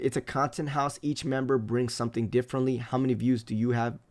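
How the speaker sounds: usual speaking voice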